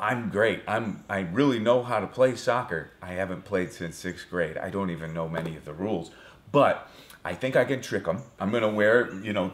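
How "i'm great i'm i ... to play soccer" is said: usual speaking voice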